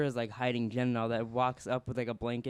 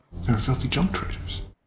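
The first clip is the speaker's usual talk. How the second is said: loud, muffled trooper voice, as through a mask; 5 dB louder than usual. Showing how the Death Troopers sound: Kylo Ren voice. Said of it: "That's how Kylo Ren sounds".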